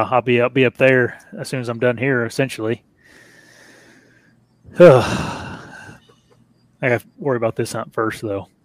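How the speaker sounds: wound-up, stressed, tense voice. Speaking to a listener who remarks on it, sounding all stressed. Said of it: "You sound all stressed".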